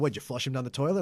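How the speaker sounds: ordinary talk, nothing marked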